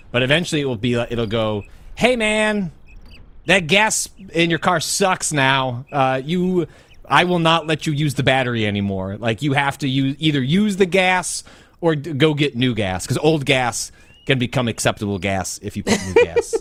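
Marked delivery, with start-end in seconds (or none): 1.9-16.5 high, loud, nagging, yelling voice. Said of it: "My car's yelling at me".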